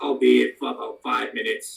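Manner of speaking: jeering, rough, creaky put-on orc voice, laid on. Telling a scene, answering in a mocking imitation of the orc's voice. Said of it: "I say this in a perfect mockery of the orc's voice".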